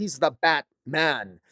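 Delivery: heavy stress on the word "the".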